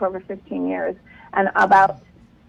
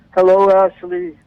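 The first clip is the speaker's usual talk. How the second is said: put-on big booming voice, louder; 6 dB louder than usual. Acting out an expected voice from beyond: mock big booming voice. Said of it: "You want this big booming voice".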